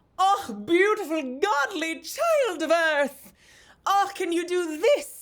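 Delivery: theatrical, flamboyant fairy voice, very high-pitched. Retelling what the fairy said to someone, in a flamboyant fairy voice. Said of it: "he's just like this like flamboyant".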